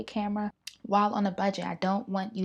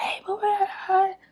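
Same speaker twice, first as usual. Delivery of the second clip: big, very high, loud, stage-projected voice; 12 semitones higher, 6 dB louder than usual. Showing how she normally projects her voice for the phone microphone: imitating her own projected voice. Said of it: "projecting my voice".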